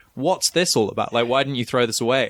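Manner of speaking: ordinary delivery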